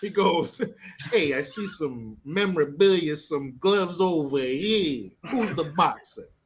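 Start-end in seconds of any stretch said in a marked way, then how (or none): 1.1-6.2 terrible, bad fake Italian accent. Retelling how a man walked in and beat up a bartender, in the worst Italian accent ever. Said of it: "worst Italian accent ever".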